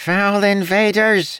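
very high, shrill, nasal scream. A voice screams at intruders rounding a corner, in a high-pitched nasal scream. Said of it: "a high-pitched, nasally voice screamed".

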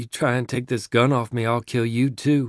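ordinary delivery, nothing marked

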